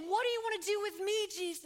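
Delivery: anguished, agonized cry full of agony. Acting out the man's cry from Mark chapter five: acting out an agonized cry. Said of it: "Do you hear the agony in his voice?".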